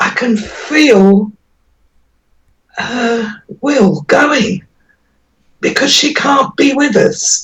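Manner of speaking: voice choking with emotion. Speaker talking about a woman who can't be with the family: getting choked up. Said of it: "I'm getting choked up".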